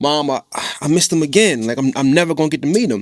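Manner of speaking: put-on fast, upset, disappointed child voice. Retelling a kid telling his mom he missed the driver again, imitating an upset, disappointed kid. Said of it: "like a very upset and disappointed tone".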